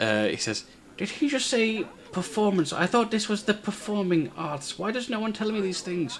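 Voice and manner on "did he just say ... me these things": wizard voice muttering in an undertone. Voicing a wizard muttering to the elf: wizard muttering under his breath. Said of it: "trying to be under his breath".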